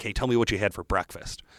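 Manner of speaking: ordinary delivery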